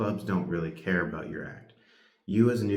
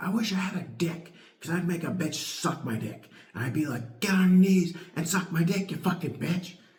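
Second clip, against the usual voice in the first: mock, very high, raving, screaming rant; 12 semitones higher than usual. Retelling a woman's act at a first comedy show: imitating a woman screaming. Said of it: "she just started screaming".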